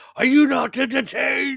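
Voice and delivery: high, drawn-out, rough and ragged scream. Imagining a scene, screaming like Russell Crowe in Gladiator. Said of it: "Doing your Russell Crowe impression".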